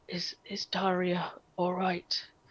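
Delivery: feeble, faint, very weak, soft voice. A game narrator voices a woman who has just calmed down, very weak voice. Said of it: "and she she very weakly um".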